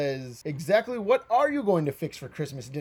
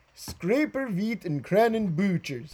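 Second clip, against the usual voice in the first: high, garbled Swedish-sounding gibberish babble; 5 semitones higher than usual. Acting out what the Swedish Chef says he'll make, in Swedish Chef gibberish. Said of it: "Swedish chef says".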